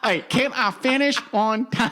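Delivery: booming, shrill, high voice, slow and drawn out. Asked to show what Ross Perot's thing was: Ross Perot impression. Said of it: "What was Perot's thing?".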